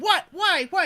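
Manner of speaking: loud, high-pitched shrieking way up high. Retelling being told to check messages: imitating own past screaming. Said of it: "And I'm screaming".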